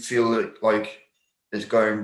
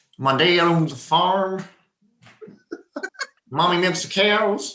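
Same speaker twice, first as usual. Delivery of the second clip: pitched-up, put-on American accent; 7 semitones higher than usual. Asked by another speaker to give some American accent, the speaker tries an American accent. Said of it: "give us some American accent".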